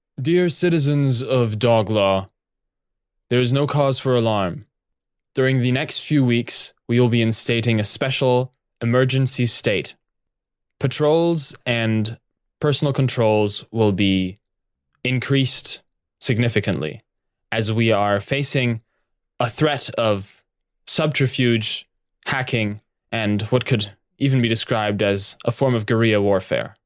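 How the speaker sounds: plain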